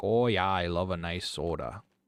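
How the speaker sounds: thick north Midwestern drawl, loud and slow. Showing how to pronounce it: heavy northern midwestern accent. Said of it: "really pronounce it like north or north north midwestern as fuck".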